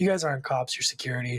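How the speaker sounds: ordinary talk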